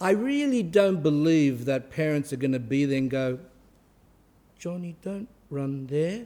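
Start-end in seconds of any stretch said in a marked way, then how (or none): 4.6-6.3 mock gentle, soft-spoken voice, quieter. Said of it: "Gotta speak nice, always gentle".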